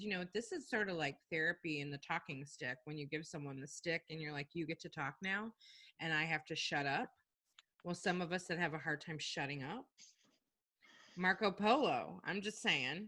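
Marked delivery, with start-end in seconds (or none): none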